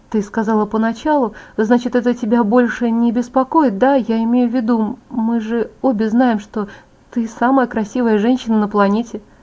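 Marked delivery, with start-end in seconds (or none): none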